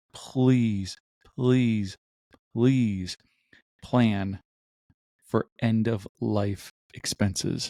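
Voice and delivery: begging, imploring, slow, drawn-out pleading. Opening a podcast episode by begging listeners: pleading. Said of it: "I'm going to beg you".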